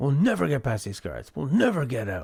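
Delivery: words rattled off quickly in game character voice. Playing a game and voicing the character Arthur, Arthur voice. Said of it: "Doing Arthur".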